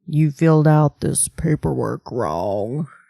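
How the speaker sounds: very low, deep put-on voice. Saying an everyday line the way Morgan would: Morgan voice impression. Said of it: "I'll say it like Morgan".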